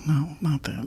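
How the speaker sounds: soft disappointed voice. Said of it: "You sound so disappointed".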